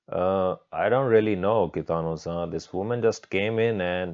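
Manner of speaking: ordinary delivery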